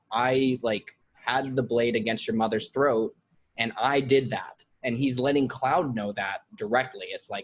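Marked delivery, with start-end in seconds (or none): none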